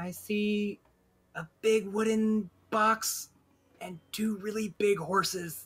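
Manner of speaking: whispering. Playing a character who quietly walks in, whispering back to a companion: whisper. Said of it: "she whispers back to Kelpie".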